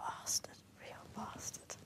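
put-on little, small voice. Retelling the patient's first words after the coma: imitating Sterling's little voice. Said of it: "I heard this little voice saying".

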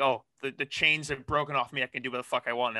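ordinary talk, nothing marked

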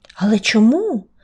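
puzzled, bewildered, confused. Reading a story, the butterfly asks the fire a question, puzzled. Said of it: "Спантеличено запитав метелик".

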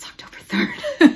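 soft, breath-only whisper. Speaker quoting a line on Mean Girls day, whispering.

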